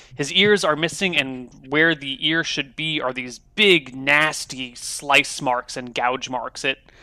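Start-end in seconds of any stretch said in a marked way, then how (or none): none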